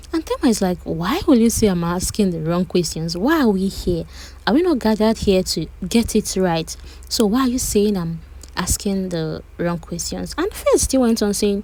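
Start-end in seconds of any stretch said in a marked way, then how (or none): none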